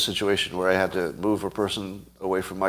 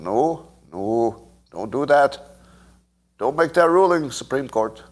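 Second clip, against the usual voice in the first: terrible, clumsy fake Canadian accent; 3 semitones higher than usual. Imagining Canada watching our politics and reacting, in a bad Canadian accent. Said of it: "that's a terrible accent".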